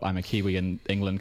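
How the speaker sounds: ordinary delivery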